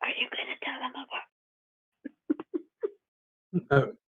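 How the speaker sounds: soft, breathy, secretive whisper. In the game, a character whispers a question to Rutherford: whisper. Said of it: "she's gonna whisper to Rutherford".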